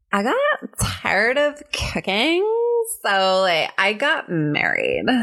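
put-on Valley Girl accent. Taking a turn in an accent game, delivering a line in a valley girl accent. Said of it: "the first one is Valley Girl".

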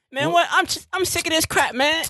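weird voice, pitched very high. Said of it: "he's got a weird voice".

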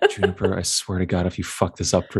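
muttered under the breath. In a game, a character over in the corner speaks of Juniper, muttering to himself. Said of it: "muttering to himself over at the corner".

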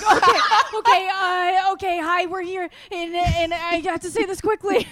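very high, hurried, stammering put-on delivery. Teasing a co-host about how they open episodes: imitating someone who just ran in. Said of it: "like, just ran in the door".

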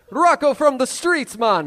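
put-on Jamaican-style accent. Giving a name to an interviewer while in costume: put-on Rastafarian accent. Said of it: "I also have an accent".

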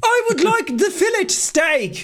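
put-on Liverpool accent. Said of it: "Do I sound like I'm in the Beatles?".

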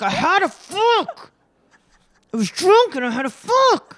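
put-on furious, very high, shrill angry outburst. Doing a TV person's line after being asked to say it: imitating an angry woman from TV. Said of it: "say her line".

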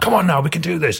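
really aggressive, very high revved-up yell. Showing how they rev people up when passionate: really aggressive rousing. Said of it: "come across as being really aggressive".

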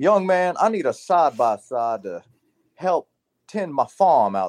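put-on strong Southern accent. Salesman retelling what a peanut farmer customer said to him: really Southern accent. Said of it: "Someone really Southern".

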